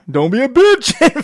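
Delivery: put-on very high, very slow, drawn-out scolding yell. Describing forcing a foot into a shoe, the speaker acts out yelling at it. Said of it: "I'm yelling at my shoe".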